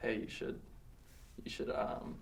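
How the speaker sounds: soft, unvoiced whisper. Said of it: "you can always whisper".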